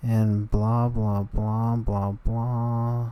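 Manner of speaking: very slow whine, syllables stretched long. Imitating a past emo self who dies mid-sentence: imitating own whining voice. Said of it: "my annoying voice is still going on, whining".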